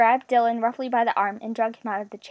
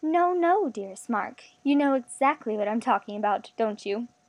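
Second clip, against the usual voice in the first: plain reading voice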